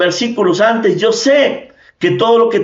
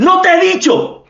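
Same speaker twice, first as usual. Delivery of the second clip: mock authoritative voice, reproachful, pitched up; 9 semitones higher than usual. Retelling Jesus rebuking a listener: Jesus speaking with authority. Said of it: "con voz de, de autoridad".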